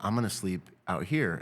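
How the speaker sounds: ordinary talk, nothing marked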